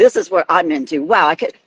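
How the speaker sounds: ordinary talk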